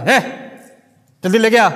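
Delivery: curt, arrogant, rude, bossy tone. Retelling how a rich kid orders an old server: imitating a rude, bossy kid. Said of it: "That's how he talks to him".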